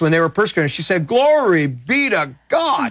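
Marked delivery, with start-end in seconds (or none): 1.1-2.9 high, very slow, drawn-out Southern drawl. Quoting Gloria Copeland while she was persecuted: Gloria Copeland Southern drawl. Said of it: "in her Southern drawl".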